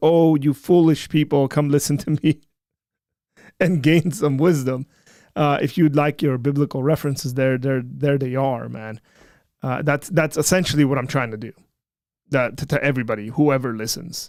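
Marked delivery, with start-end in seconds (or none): none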